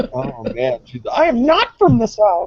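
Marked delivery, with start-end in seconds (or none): 1.1-2.5 very high, offended, cross voice. Imitating Kathy, who got mad at another speaker: Kathy impersonation. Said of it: "my best Kathy impersonation".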